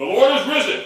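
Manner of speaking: loud, ringing call out to a room.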